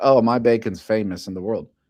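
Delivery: normal talking voice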